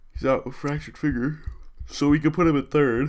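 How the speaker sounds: talking through a high yawn. Thinking aloud about player moves, the speaker keeps yawning: yawning while talking. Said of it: "I gotta stop yawning".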